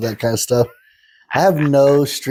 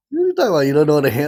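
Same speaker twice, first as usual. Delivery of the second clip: put-on incredulous voice, higher; 5 semitones higher than usual. Retelling a friend's disbelieving reply: imitating Hannah. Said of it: "She's like".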